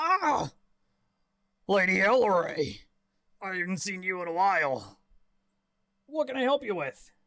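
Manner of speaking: put-on heavily drunk elderly man voice. Voicing an old man in a tavern, looking up from his ale: deeply drunk old man voice. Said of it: "he's very, very deeply inebriated".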